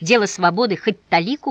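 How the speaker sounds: plain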